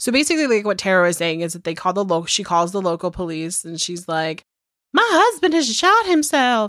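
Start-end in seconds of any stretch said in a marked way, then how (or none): 4.9-6.7 very high, theatrical, drawn-out Southern drawl. Retelling the wife's call to local police: imitating someone southern and dramatic. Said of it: "I'm being, I don't know, Southern dramatic".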